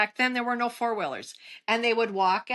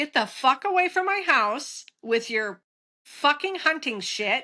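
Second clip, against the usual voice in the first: mock furious, angry yelling outburst; 3 semitones higher than usual. Retelling chasing hunters away from the house: retelling own angry yell. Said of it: "I just started yelling and clapping my hands".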